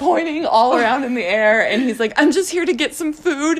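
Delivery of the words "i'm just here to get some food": high, frantic blurt, man's voice. Retelling what a stranger in a parking lot said: imitating a frantic new father. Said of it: "he's just, like, frantic".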